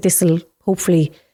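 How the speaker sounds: ordinary delivery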